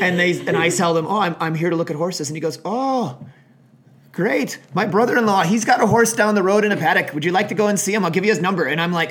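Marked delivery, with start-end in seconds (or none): 2.6-8.6 bad fake Irish accent, higher and louder. Retelling what a man in Ireland said to them, in a bad Irish accent. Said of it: "that's a really bad Irish accent".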